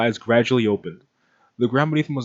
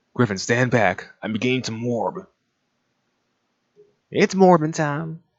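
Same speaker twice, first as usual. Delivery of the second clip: put-on gravelly New York accent. Trying out a voice for a line, speaker does a gravelly New York accent. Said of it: "That's exactly it".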